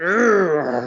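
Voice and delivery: forceful, aggressive grunt.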